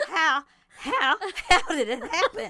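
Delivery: loud, high-pitched, hammed-up cartoon voice. Questioning another person in an improvised scene, in a Foghorn Leghorn voice. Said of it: "We're leaning into it".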